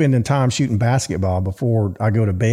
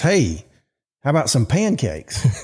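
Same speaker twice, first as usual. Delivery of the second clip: put-on child's voice calling out from a distance; 4 semitones higher than usual. Retelling his 8-year-old son calling out to his mom, imitating a child hollering. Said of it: "my son hollers and says".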